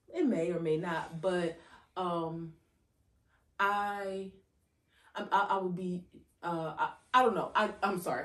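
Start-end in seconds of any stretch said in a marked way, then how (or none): 3.6-8.2 stuttering, stammering over words. Talking about a bad blow up and upcoming therapy, stuttering over words. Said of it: "I'm stuttering because a lot of thoughts".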